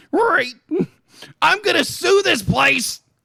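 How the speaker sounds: very high-pitched cartoon dog voice. Reacting to a clip with another speaker: Scooby-Doo voice. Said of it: "switching into your Scooby-Doo voice".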